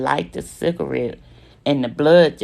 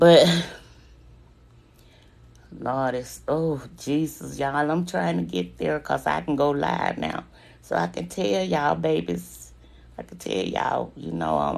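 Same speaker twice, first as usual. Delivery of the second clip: voice right on the edge of crying; 4 dB quieter than usual. Telling viewers on a live stream about being shot; holding back tears. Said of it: "I'm trying not to cry".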